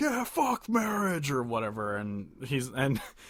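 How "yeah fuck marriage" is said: play-acted, very high-pitched heckling yell. Retelling a concert where one guy in the crowd heckled: imitating a guy yelling. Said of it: "starts yelling".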